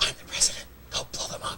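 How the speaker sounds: very quiet, hushed, breathy whisper. Joking about an actor who whispers everything, whispering like Kiefer Sutherland. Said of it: "He whispers everything".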